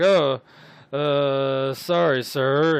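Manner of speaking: put-on loud, very slow drunk voice, drawn out, long uh. Voicing a stumbling drunk after a character bumps into him: drunk guy voice. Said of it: "the drunk guy kinda looks at you, and he's like".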